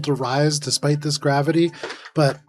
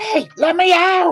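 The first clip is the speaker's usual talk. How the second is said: muffled goblin shout, higher and louder; 4 dB louder than usual. Voicing a swallowed goblin calling from inside the frog: goblin yelling from inside a frog. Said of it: "this goblin just go".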